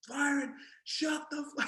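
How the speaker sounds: imitated shouting. Retelling yelling at the barking dog at four in the morning: retelling own past shout. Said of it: "I'm shouting at this dog".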